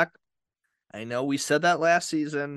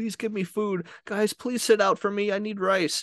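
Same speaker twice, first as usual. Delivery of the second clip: high, crying, begging tone.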